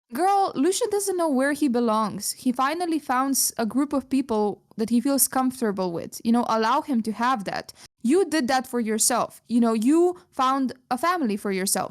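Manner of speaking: normal talking voice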